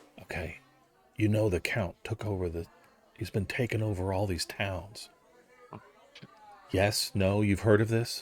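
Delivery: secretive, conspiratorial confiding tone. Game master playing the magistrate, sitting down at the players' table: conspiratorial. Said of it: "and this is the magistrate. / he kind of he sits down at your table. / and he kind of conspiratorially is like".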